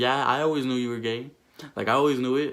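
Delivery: plain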